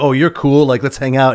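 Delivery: ordinary delivery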